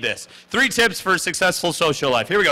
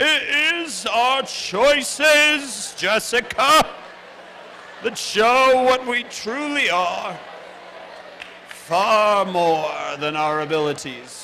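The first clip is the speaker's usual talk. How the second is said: put-on very drawn-out, pitched-up ancient old man voice; 5 semitones higher than usual. Showing the audience how to say the quote: old man voice. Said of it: "in your best old man voice".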